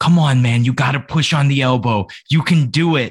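put-on whispering. Retelling how a referee coached an opponent mid-match: imitating someone whispering. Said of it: "is whispering in this dude's ear".

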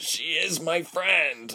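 very high, strained, croaked voice. After a guard shocks him to the ground, he speaks up, croaking. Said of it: "he croaked".

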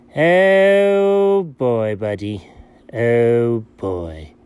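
put-on low creaky vocal fry, an accent, drawn-out "oh". Opening an episode of a recurring series, low vocal-fry voice with accent. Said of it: "you were doing the vocal fry thing with the low voice and stuff with the accent".

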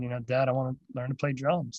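ordinary talk

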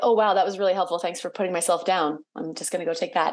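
ordinary talk

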